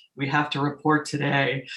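put-on, serious news anchor delivery. Showing how a pop radio host suddenly sounds: imitating a serious news anchor. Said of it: "sound like Joe News guy".

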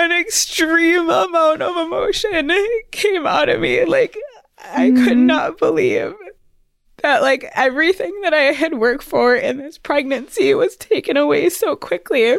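tearful, very high crying voice, cracking and breaking. Recounting a pregnancy setback, the speaker is crying, voice breaking. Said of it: "Did not think I was going to cry at this part".

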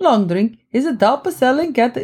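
failed, laid-on accent landing as bad Italian. Trying a finnish accent while reading drink copy, in a bad italian accent. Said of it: "No, that's Italian".

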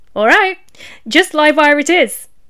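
playful teasing. Narrating Ferocity answering the bot Livewire after hearing his name, teasingly. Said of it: "said Ferocity teasingly".

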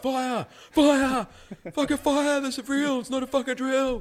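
very high, shrill, loud top-of-lungs screaming. Retelling a guy running down the hallway yelling fire, imitating a guy screaming. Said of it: "he's screaming at the top of his lungs".

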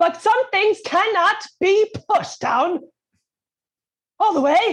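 very high-pitched fake British accent. Speaking as an alter ego before a listener asks about the accent, put-on british accent. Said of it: "Where did that accent come from?".

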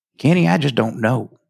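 bad, terrible, fake put-on Tennessee accent. Retelling what someone said to Kenny, in a terrible Tennessee accent. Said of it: "in a terrible Tennessee accent".

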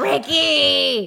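rough, creaky, drawn-out call. Blaming a husband for a failure: Lucille Ball voice. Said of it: "I always go into my Lucille Ball voice".

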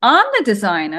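put-on New Jersey accent. Retelling how their mother answered a caller at work, in a Jersey accent. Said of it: "in her Jersey accent".

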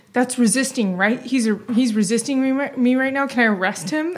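mock flustered, excited officer voice stumbling over words. Retelling a cop calling the station to ask about an arrest: imitating a flustered, excited cop. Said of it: "is excited about it".

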